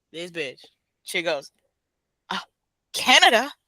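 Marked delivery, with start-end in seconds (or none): 2.3-3.4 put-on, cheeky, sassy, pitched up, with attitude. Retelling a driver's answer to a border guard: imitating a sassy answer. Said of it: "With sass, though".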